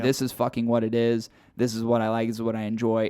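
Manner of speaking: ordinary delivery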